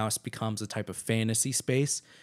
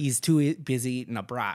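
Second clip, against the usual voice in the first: failed, fake Chicago accent. Joking about chicago police, the speaker attempts a bad chicago accent. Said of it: "I can't do my Chicago accent".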